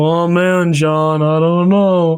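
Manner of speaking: very slow, dry, dead-level deadpan drawl. Discussing Garfield's voice actors, the speaker demonstrates the classic take: deadpan Garfield voice. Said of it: "like kind of like deadpan voice to it".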